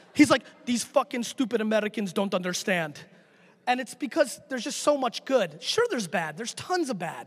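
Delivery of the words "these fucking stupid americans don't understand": put-on heavy Russian accent. The speaker imitates his dad when people hate on the country, imitating dad's russian accent. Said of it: "my dad's Russian accent hits like 11".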